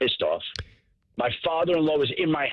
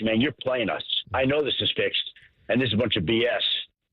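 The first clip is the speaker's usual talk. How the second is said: plain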